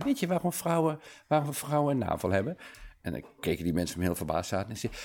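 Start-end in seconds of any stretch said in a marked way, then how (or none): 0.0-2.6 put-on very sweet, innocent little-boy voice, high and slow. Retelling a little boy asking people a joke, in a sweet child's voice. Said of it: "Hij vroeg met een hele lieve kinderstem".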